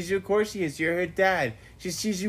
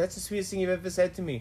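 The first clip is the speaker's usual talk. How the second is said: normal talking voice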